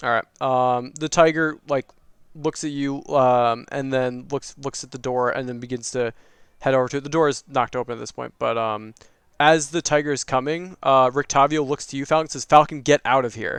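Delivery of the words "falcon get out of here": very serious, grave, earnest tone. Voicing a character urging another to get out as a tiger approaches: very serious. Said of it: "Very seriously".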